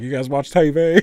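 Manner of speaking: Southern drifting into Texan accent. Illustrating slipping into a Southern accent: slipping into a Texan accent. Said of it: "I don't know why I said that like that".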